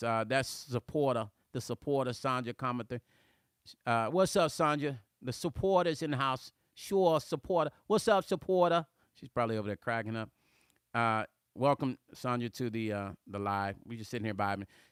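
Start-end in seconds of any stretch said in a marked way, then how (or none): 0.3-8.9 put-on New York–New Jersey accent. Greeting a supporter on a livestream, showing off a New Jersey accent. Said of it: "here's my New Jersey accent".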